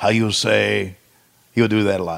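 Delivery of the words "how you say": bad, terrible, laid-on put-on Russian accent. Imitating Nikita's promo catchphrase: imitating Nikita's bad Russian accent. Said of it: "the worst accent ever".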